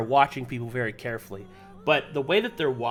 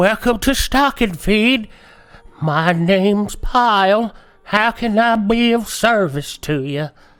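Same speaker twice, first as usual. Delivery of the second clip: put-on very loud, high, elderly halfling shopkeeper voice; 7 semitones higher, 10 dB louder than usual. Voicing the halfling who greets players entering the store: very old halfling shopkeeper voice. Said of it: "there is a very old halfling behind the table".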